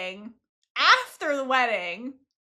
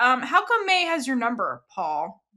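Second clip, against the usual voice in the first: normal talking voice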